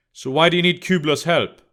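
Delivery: plain reading voice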